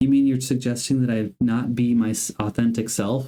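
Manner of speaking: ordinary talk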